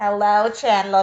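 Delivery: slow, drawn-out put-on voice.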